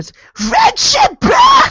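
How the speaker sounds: screamed in a Californian accent. Co-host shouting the podcast's catchphrase, screamed in Californian accent. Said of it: "scream it in a Californian accent".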